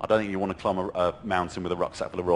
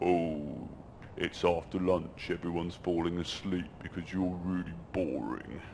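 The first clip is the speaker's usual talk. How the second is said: goofy put-on silly voice, soft and slow; 2 semitones lower, 8 dB quieter than usual. Demonstrating how to repeat a nagging thought, in a silly voice. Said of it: "but in a silly voice".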